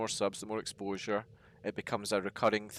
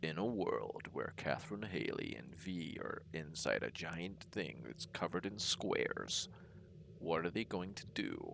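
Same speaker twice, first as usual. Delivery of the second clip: deep, hushed movie-trailer narrator voice-over; 4 semitones lower, 8 dB quieter than usual. Streamer introducing the stream with a co-host, movie trailer narrator voice. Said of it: "that's almost like the trailer guy's voice".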